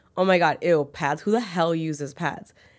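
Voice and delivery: ordinary talk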